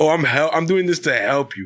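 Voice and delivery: mock condescending, patronizing, falsely helpful teacher tone. Retelling how a math teacher talked: imitating Mister Duval's condescending tone. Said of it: "he was like a condescending ass".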